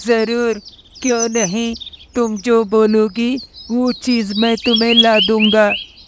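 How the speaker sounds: eager, readily agreeing crow character voice. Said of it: "तभी वहां पर [name] कौवा नीचे आ जाता है। / [name] कौवा मन ही मन सोच लेता है".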